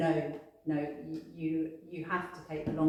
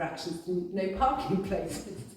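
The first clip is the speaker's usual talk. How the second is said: laughing through the words; 2 semitones higher than usual. Remembering a client, laughing while talking. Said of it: "I'm just laughing".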